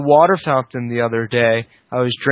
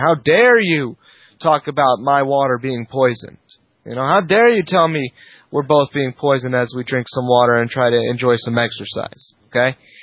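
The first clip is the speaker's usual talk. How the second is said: ordinary talk, nothing marked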